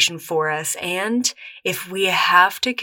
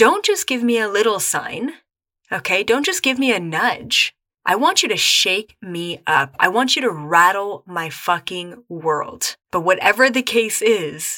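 ordinary talk

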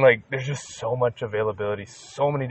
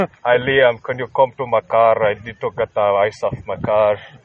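fake Scandinavian accent, louder; 8 dB louder than usual. In a group conversation about Scandinavian countries, imitating how they talk: mock Scandinavian accent. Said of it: "but they talk like this".

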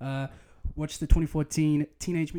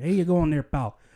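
loud, put-on, slight Chicago accent; 6 dB louder than usual. Suggesting a generic american voice add some regional flavor: chicago accent. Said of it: "chuck in a little Chicago there".

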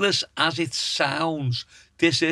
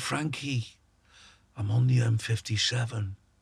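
quiet, hushed half-whisper; 5 semitones lower, 5 dB quieter than usual. Retelling a friend's phone call at night: imitating George half-whispering. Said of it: "he's whispering down the phone and he went".

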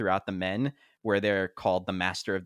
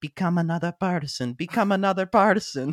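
put-on, loud, very high Italian accent; 10 semitones higher, 5 dB louder than usual. Retelling a movie character's line while transforming: imitating an italian accent. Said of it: "he has this Italian accent".

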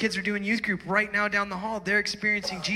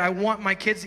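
plain

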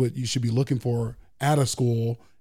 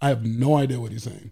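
ordinary talk

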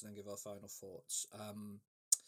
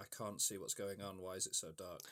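usual speaking voice

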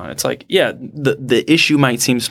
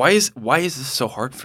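belittling, dismissive, can't-be-bothered tone; 3 dB quieter than usual. Answering a request to say the same question: mock dismissive tone. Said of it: "the dismissive tone of the same words".

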